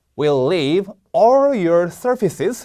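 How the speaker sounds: "all" hit hard, read very slowly.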